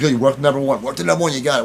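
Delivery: plain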